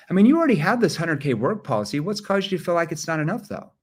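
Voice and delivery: rushed, no pauses. Sales training demo of a question asked without a verbal pause: rushed question, no pauses. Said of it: "if you did not verbal pause, you just asked the question".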